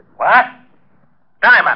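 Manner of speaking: abrupt, high-pitched, blurted outburst. Told that Jerome has found the body again, yelling for Diamond. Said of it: "You better watch that yelling".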